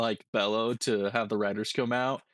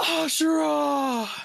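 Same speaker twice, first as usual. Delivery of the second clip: mock very high, long, drawn-out shout; 4 dB louder than usual. Voicing a herald hyping the crowd: yelling a name. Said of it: "it just yells".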